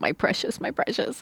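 high creature voice. Joking about fearing to look like Gollum after hair loss: Gollum voice. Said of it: "afraid I was gonna look like Gollum".

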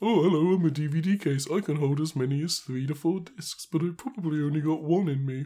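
high British voice. Asked for an impression of a DVD case, speaking as it in a British accent. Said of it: "Why is it British?".

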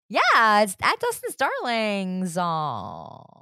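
heavy, creaky vocal fry, very slow and drawn out. Giving the show's social media handle, strong vocal fry. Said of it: "My vocal fry is so on point today".

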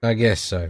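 unexcited, flat tone. Agreeing to move on to talking about the games: unenthusiastic. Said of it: "Don't sound too excited about it".

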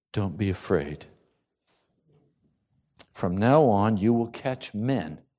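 put-on very kind, gentle tone. Retelling what Jesus says to Simon, retelling words in a kind voice. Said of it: "in a very kind voice".

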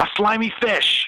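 mock sudden gleeful excitement, very high-pitched. Retelling the DM's sudden answer to the thief: imitating a DM suddenly lighting up. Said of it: "suddenly, like, lit up and he says".

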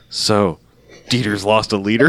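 mock very serious tone. Retelling what someone said on hearing how much blood was lost, mock very serious tone. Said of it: "very serious".

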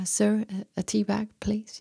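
nervous, hesitant, timid and fearful voice. Speaker retells asking strangers for a tea bag, imitating their phrasing, retelling a fearful request. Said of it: "I was sweating and in fear".

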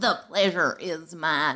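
put-on American Southern accent. Meeting a new guest in an improv scene: Southern accent. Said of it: "Oh, Southern accent".

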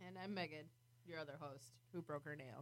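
very soft, hushed, unhappy, fed-up, irritated tone. Introducing herself as the other host after breaking a nail: unhappy, irritated tone. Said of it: "she doesn't sound very happy right now".

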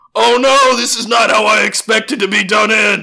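full-on, high-pitched screaming. A narrator voices a man running out of a burning shack: screaming. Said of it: "he's screaming".

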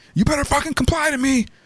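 high-pitched, barking cop voice.

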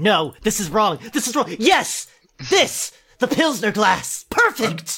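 mock frantic tone ending in excited delight. Picturing the letter writer Kyle searching his cupboards, imagining Kyle's excited exclamation. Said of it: "just picturing Kyle, like, crashing through all of his cupboards, saying".

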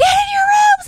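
shrill, high, loud, very drawn-out scream. Retelling bedtime when nobody listens, imitating a scream. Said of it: "I'm screaming".

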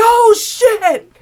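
loud, high-pitched scream. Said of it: "I screamed".

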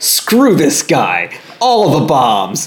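loud, high, slow, swooping soldiers' shout. Retelling what the soldiers say when they see the man: imitating soldiers shouting. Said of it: "they're like".

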